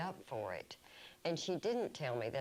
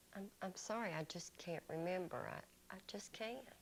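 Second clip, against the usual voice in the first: meek, soft, timid, faltering stammer; 4 semitones higher, 8 dB quieter than usual. At an appeals hearing, a witness answers an accusatory question: timid quiet voice. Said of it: "You need to speak up".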